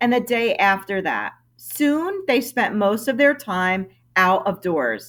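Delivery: ordinary delivery, nothing marked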